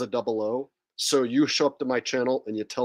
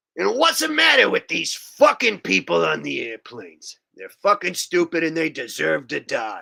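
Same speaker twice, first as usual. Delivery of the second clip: full-on, loud ranting with swooping pitch; 4 semitones higher, 5 dB louder than usual. Acting like a guy who talked like this for his whole career: imitating a guy's way of talking. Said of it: "we're gonna act like a guy who talked like this".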